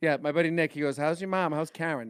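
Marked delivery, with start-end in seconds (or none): 1.0-2.1 put-on Jersey accent, slower. Retelling what a friend asks about the speaker's mom, imitating Nick's Jersey accent. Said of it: "My buddy Nick's from Jersey".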